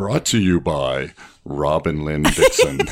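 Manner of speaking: polished, professional radio-style announcer voice. Crediting the show's sponsors: professional announcer voice. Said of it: "That was my professional announcer voice".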